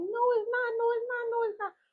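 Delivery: very high, tearful, crying, pleading voice. Retelling being teased about a doll: imitating own past crying. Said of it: "I'm crying and everything".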